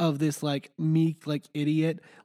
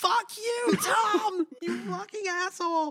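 play-acted, outraged yell, pitched very high. Speaker recounts what they yelled at tom: retelling a yell. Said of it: "And I literally yelled out".

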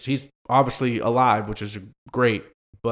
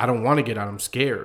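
put-on frightened man voice. Retelling what a frightened man sitting in his car said, imitating a scared man. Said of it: "he's just scared to move".

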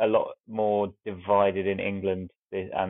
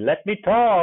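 put-on shrill, very high, loud, screeching toddler shout; 12 semitones higher, 9 dB louder than usual. Telling a story about a player's outburst to teammates, you give it retelling a toddler screech. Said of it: "with the screeching tone of a toddler".

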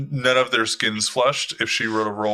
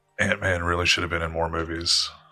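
whispered aside in character voice, lower; 4 semitones lower, 3 dB quieter than usual. Voicing a character who leans to another and whispers: whispering in character. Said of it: "he whispers and he goes".

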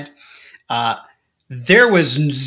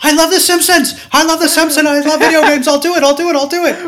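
put-on eager anxious voice, higher and louder; 14 semitones higher, 5 dB louder than usual. Acting out the intern who volunteers to answer questions: imitating an eager anxious intern. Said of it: "some anxious intern who's like".

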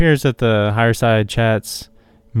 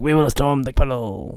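fake French accent, quieter; 3 semitones higher, 4 dB quieter than usual. Retelling what a man on the way to the metro said, fake french accent. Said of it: "he had a fake French accent".

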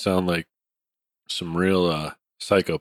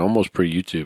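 usual speaking voice

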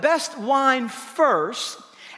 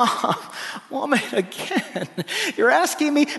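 exasperated, put-upon voice. Imagining how he answered his mother, imitating exasperation. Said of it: "in a kind of exasperated way".

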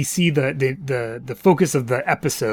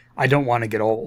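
graver, more serious delivery; 2 semitones lower than usual. Recapping a show, quoting a woman's honest moment, acting out her serious tone. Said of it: "she says in a slightly more serious tone of voice".

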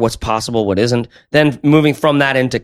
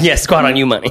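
plain

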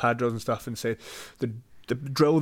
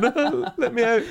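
very high, slow, drawn-out tearful crying voice; 11 semitones higher, 3 dB louder than usual. Retelling being caught in the corner by an opponent's combination, imitating himself crying. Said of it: "I'd be in the corner crying".

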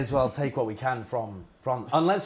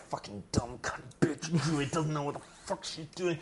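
muttered under the breath, almost whispered; 3 semitones higher, 8 dB quieter than usual. A character nearly killed by their own party, muttering under breath. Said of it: "Just muttering under my breath".

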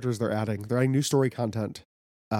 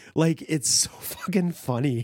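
normal talking voice

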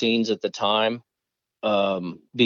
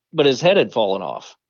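usual speaking voice

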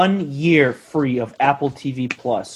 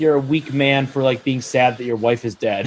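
ordinary talk, nothing marked

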